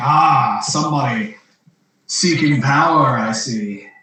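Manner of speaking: slow, chuckling, secretive, mysterious spirit voice. Voicing a voice heard at a coffin, starting to laugh: laughing mysterious voice. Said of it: "the voice kind of, like, starts laughing and is like".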